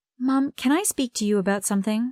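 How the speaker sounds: plain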